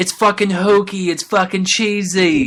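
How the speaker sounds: put-on British rock star accent and voice. Imitating people who call the title cheesy: imitating a British rock star on cocaine. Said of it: "I sound like a British rock star on a cocaine addiction".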